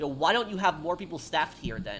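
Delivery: normal talking voice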